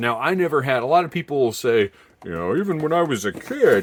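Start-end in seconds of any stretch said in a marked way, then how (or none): 2.6-3.8 mocking tone, higher pitch. Quoting what some collectors claim: imitating others in a mocking tone. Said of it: "the mocking tone in my voice".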